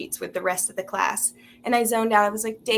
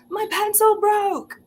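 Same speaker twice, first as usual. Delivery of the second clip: mock sudden scream, very high and loud; 12 semitones higher, 5 dB louder than usual. Retelling suddenly standing up in a silent class: imitating own scream. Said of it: "involuntarily stood up and screamed".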